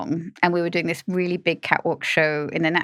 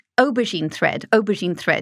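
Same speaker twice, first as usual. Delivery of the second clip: plain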